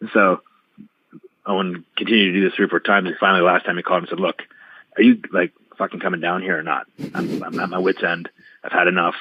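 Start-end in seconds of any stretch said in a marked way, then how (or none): none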